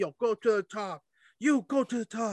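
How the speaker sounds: high-pitched, urgent, commanding call. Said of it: "yelling at Tamina".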